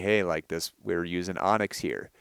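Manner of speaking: plain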